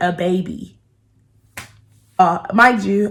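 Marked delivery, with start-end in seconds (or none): 0.0-0.8 secretive, confiding, soft hushed stage whisper. Retelling what a woman said to him, imitating a half-whisper. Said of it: "and she whispered".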